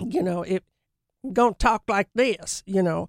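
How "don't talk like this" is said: Southern drawl, higher pitch. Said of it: "I just went Southern".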